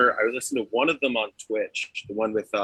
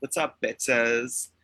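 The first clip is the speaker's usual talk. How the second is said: put-on Southern California valley girl accent; 2 semitones higher than usual. Retelling a friend's joke about a cat's name: South Cali girl impression. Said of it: "impression of, like, a South Cali girl going like".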